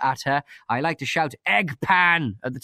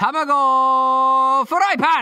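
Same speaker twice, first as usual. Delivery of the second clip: playful, fake mock yell, higher and louder; 9 semitones higher, 5 dB louder than usual. Showing how Sam would shout at his wife: mock shouting. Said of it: "What will Sam be shouting at his wife?".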